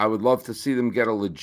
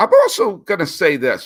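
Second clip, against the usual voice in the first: voice cracking mid-line, high and loud; 7 semitones higher, 7 dB louder than usual. Speaker arguing a sports team should drop its name if it moves: voice cracking. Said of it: "my voice just broke".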